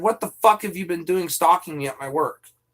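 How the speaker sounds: ordinary talk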